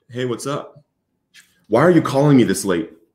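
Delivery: gentle, easygoing, kindly, mild-mannered voice. Retelling a late-night phone call, quoting the reply: imitating a soft voice. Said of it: "a soft voice replied".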